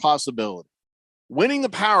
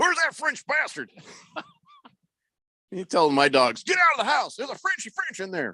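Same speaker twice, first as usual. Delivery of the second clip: high, swooping army sergeant kind of voice; 8 semitones higher, 4 dB quieter than usual. Voicing Cecil telling the dogs to get someone out: army sergeant voice. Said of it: "sergeant in the army kind of voice".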